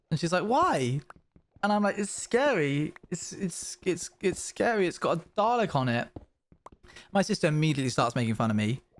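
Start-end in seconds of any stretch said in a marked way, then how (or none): 2.0-6.1 mock very slow, scared, near-tears stammer. Retelling being handed an advent calendar as the youngest sibling: retelling being teary. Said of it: "getting a bit teary".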